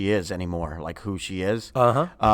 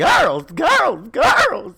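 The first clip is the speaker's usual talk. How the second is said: very high, loud, belted-out swooping voice; 8 dB louder than usual. Answering with a quick impression: Mrs. Garrett impression. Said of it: "Was that your Mrs. Garrett impression?".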